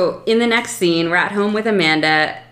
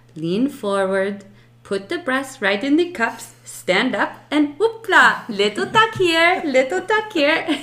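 higher, questionable put-on Italian accent; 7 semitones higher than usual. Recapping a show, quoting the little Italian lady selling bras: questionable Italian accent. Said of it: "I don't know if this is an Italian accent".

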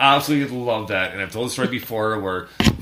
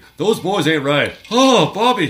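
loud, high-pitched cartoon voice; 8 semitones higher, 7 dB louder than usual. Recalling a show the speaker used to really like, doing a Hank Hill impression. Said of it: "I can do a bit of a Hank Hill impression".

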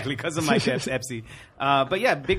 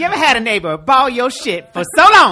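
very high, loud, pissed-off, fed-up yell; 10 semitones higher, 13 dB louder than usual. Doing an impression for the others: Chris Rock impression. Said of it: "It's Chris Rock".

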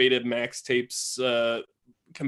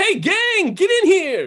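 very loud, shrill shout, swooping pitch, drawn out; 9 dB louder than usual. Calling the gang in from another room in character: yelling. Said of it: "And I'm gonna yell".

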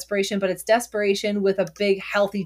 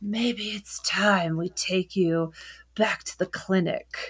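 hushed, slow half-whisper close to the ear; 4 dB quieter than usual. Speaker recounting a man half-whispering into a woman's ear, retelling a half-whisper. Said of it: "is like whispering like little tropes into her ear".

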